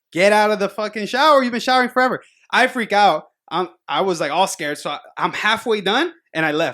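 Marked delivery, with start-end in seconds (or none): 0.2-2.3 put-on, fed-up, angry scolding yell. Retelling how mom yelled through the bathroom door: imitating mom yelling. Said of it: "she's yelling at me".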